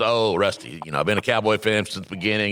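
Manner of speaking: plain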